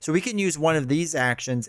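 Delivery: plain reading voice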